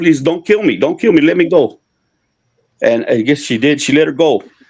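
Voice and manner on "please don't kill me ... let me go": put-on desperate, begging voice. Retelling how a woman begged the curandera: retelling a desperate plea. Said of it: "she was begging her".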